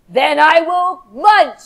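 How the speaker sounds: mean, low, slow big bad shark voice. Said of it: "In your best shark mean, mean face".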